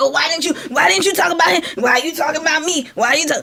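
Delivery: sassy, mouthy, accusing, attacking rant. Reacting to a video, imitating a man attacking women: imitating a sassy attacking man. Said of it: "Sir, you're too sassy".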